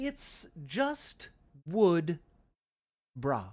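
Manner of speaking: put-on very slow, very proper English accent. Imagining how Wad would say the phrase, imitating Wad's proper English accent. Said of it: "with your very proper English accent".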